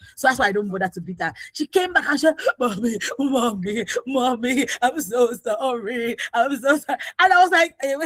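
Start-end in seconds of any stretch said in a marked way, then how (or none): 2.6-7.0 mock slow, drawn-out, weepy tearful wailing. Mother retells her daughter coming back to apologize, imitating daughter's tearful pleading. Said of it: "What happened that you are crying like this?".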